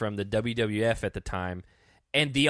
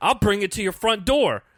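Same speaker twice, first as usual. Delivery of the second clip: put-on, very high, loud, worked-up shouting; 9 semitones higher, 6 dB louder than usual. Retelling how CT, worked up, yelled at Fessy: imitating CT yelling. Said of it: "yelling at Fessy".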